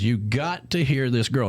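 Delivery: plain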